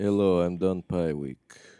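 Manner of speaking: fake Eastern European vampire accent. Joking about pie week being done, greeting in an Eastern European vampire voice. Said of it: "I'm doing kind of an Eastern European vampire voice".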